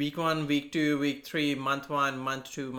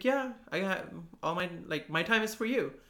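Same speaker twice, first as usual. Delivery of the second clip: relaxed, easygoing, reassuring calm, acted out, pitched up; 5 semitones higher than usual. Retelling what your busy manager said on day one, imitating a calm manner. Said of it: "he's always just like this very calm manners".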